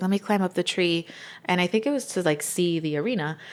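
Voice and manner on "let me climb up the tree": normal talking voice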